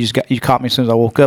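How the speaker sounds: plain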